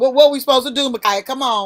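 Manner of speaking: loud sarcastic jeer.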